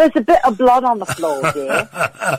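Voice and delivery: clumsy, poor put-on English accent. Quoting a father-in-law's remark about a book: bad impression of english father-in-law. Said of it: "my bad in-, in-, impersonation of my father-in-law".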